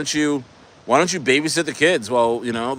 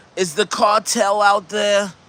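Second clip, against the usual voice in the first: put-on slow, high-pitched elderly woman voice; 6 semitones higher than usual.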